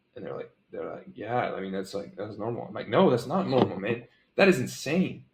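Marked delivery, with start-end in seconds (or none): 4.3-5.1 mock astonished, high, shocked disbelief. Reacting to a price others call normal, shocked and surprised. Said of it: "I'm using my tonality um, to really show them, like, holy crap, like I'm actually surprised".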